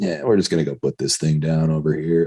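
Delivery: put-on super chill, easygoing, unbothered calm voice. Imitating a warrant officer on the headset as something goes wrong, totally chill. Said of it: "like just totally chill".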